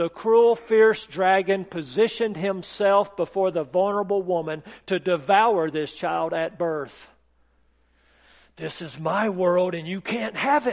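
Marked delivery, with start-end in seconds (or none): 8.6-10.7 hissing, menacing delivery. Narrating the dragon speaking to baby Jesus at his birth, hissing. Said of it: "he hissed".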